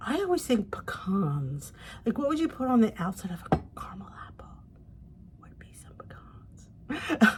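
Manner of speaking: whispering. Speaker explains a recipe, whispering. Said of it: "I know I whisper".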